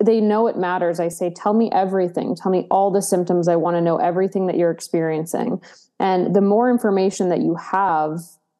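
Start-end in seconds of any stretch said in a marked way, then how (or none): none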